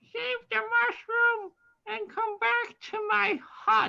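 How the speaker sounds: tiny, high, loud, squeaky little voice. Game narrator voicing what players hear after a character turns into a moth, little squeaky voice. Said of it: "you hear a little squeaky voice".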